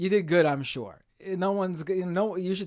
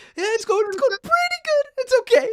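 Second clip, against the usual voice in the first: sudden jump to much higher, louder voice; 7 dB louder than usual. Speaker mimicking the voice people use when asked how they are: voice jumping way up. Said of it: "their voice goes up like 10 octaves".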